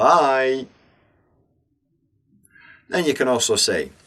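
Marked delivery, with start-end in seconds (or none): 0.0-0.7 stretched, lingering bye with long vowel. Explaining that people lengthen the short word bye: drawn-out bye. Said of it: "everyone tends to make it longer by saying bye".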